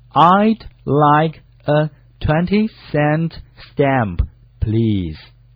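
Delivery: very slow, careful speech at about half speed. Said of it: "这该怎么说呢".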